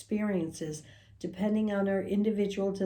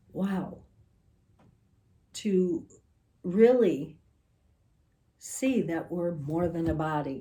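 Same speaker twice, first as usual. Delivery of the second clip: crying, tearful voice; 3 semitones lower than usual. Speaker recounting an experience they witnessed, crying while talking. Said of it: "I'm crying".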